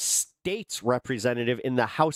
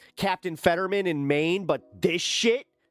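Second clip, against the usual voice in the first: normal talking voice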